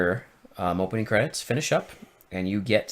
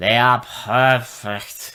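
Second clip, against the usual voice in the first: mock drunk-sounding delivery, louder; 6 dB louder than usual. Imitating an actress's line from a movie: imitating drunk-sounding line reading. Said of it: "she sounds like she's drunk".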